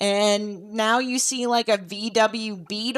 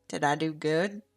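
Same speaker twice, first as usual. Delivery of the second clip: soft, half-whispered voice; 6 semitones lower, 5 dB quieter than usual. Voicing Wilbur in a game scene: half-whispering as Wilbur. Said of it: "Wilbur does kind of whisper".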